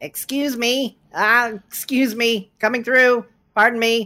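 put-on little gnome voice, high and loud. Voicing a gnome pushing through a crowd with a bowl: gnome voice. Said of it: "a gnome".

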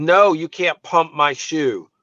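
put-on snubbing voice, half called out, very loud. Retelling a kid's refusal to let the speaker pump his shoe: really loud voice. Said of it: "says in this really loud voice to embarrass me".

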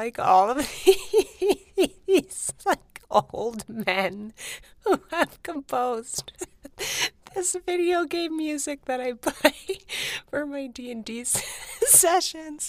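helpless, high giggling, broken by laughter.

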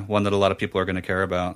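quick, deadpan, sarcastic delivery.

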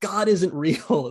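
high shout at the top of the lungs. Retelling a friend shouting at the sky: retelling a shout at top of lungs. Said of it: "at the top of his lungs".

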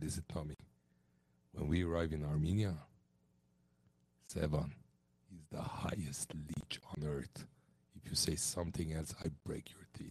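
put-on Italian accent, pitched deep and hushed. Retelling what he told a guy named Tommy: deepest Italian voice. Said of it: "I did my deepest Italian voice".

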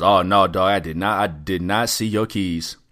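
overly firm, insistent, pushed far too hard. Retelling a man's reply about missing keys: imitating someone denying too hard. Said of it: "He said it a little too hard".

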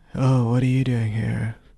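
play-acted dejected, weary, let-down voice. Imitating the sculptor's greeting from the manga: imitating a dejected voice. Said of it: "he just sounded really dejected".

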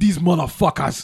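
put-on South African accent in a waiter's voice. Retelling what a waiter said in the back, in south african accent. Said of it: "with that accent".

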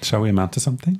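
gentle, calm, welcoming, inviting tone. Showing how a quote reads as an invitation: calm, inviting reading. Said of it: "so calm and, like, you wanna, you wanna come?".

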